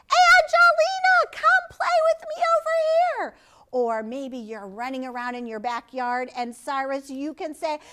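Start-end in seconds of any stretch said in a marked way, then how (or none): 0.1-3.3 very high, shrill, loud calling-out yell. Showing children how they can call out on the playground: yelling. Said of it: "you can yell and scream and say".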